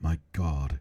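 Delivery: theatrical, grave, overdramatic outcry of shock. Retelling a scene where Ross opens a box: imitating Ross's dramatic "my God". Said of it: "he looks at it and he goes".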